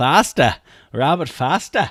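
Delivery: loud put-on New England accent. Commenting on a football game, saying a receiver's name in a New England accent. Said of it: "Like I was from fucking New England".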